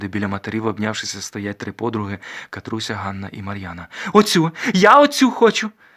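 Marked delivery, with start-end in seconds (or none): 4.1-5.7 bright ringing voice, very high and very loud. A young lady points at one of three friends, speaking in a ringing voice. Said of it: "Дзвінко каже панночка".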